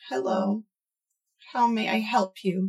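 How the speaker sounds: sad, sorrowful, mournful delivery. Narrator voicing a sulking character's greeting, quiet and sad. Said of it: "quite quietly and sadly".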